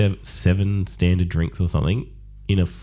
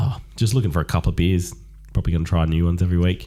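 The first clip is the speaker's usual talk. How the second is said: usual speaking voice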